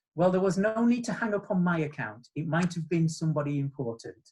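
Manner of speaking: put-on sweet tone. Retelling what a woman said once the phone was turned off, imitating her sweet tone. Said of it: "and just smiled so sweetly".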